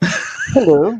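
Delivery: campy radio-style voice.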